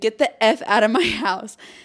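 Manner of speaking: urgent yelled, screamed voice. Recounting chasing two intruders through the house, retelling a scream. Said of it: "started screaming".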